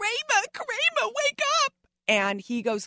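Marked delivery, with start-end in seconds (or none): 0.0-1.7 yelling in a very high, shrill voice. Retelling a scene where she had to wake a sleeping partner: imitating her own yell. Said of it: "So I'm yelling".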